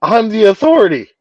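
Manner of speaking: voice cracking. Insisting to the others that they are in charge: voice cracking. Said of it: "my voice just cracked again".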